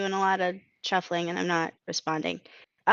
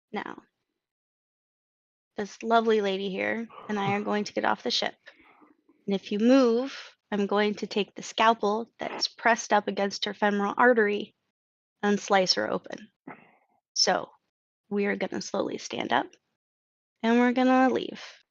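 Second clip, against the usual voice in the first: very calm, even tone. Voicing a character holding a scalpel to a hostage: very calm. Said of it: "he says very calmly".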